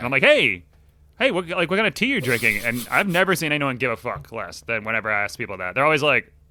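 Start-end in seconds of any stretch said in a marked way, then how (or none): 0.2-2.6 eager, gushing, excited, high, swooping pitch. Retelling asking someone on a video call about their tea: imitating own excited question. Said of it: "I get so, so excited".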